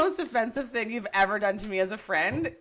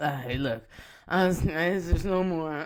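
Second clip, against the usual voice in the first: put-on drunk voice, lower; 6 semitones lower than usual. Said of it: "Was Mary drunk?".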